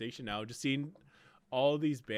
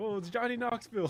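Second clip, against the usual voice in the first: startled, surprised exclaim pitched very high; 11 semitones higher, 3 dB louder than usual. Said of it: "That's how he sounds".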